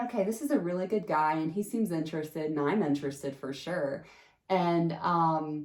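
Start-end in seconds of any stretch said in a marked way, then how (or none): none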